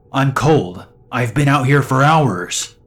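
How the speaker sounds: loud, angry shouting. Reading a story, a stranger demands a ride home: angry shout. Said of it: "she shouts, pretty angrily".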